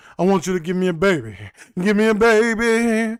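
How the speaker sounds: blended, mixed New York accent. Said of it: "a mixture of New York and um [name]".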